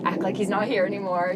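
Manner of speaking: ordinary delivery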